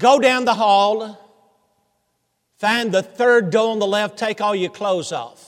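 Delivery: play-acted sour, grudging voice. Retelling a joke, quoting the woman behind the desk: imitating a bitter voice. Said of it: "with a frown on her face and bitterness in her voice".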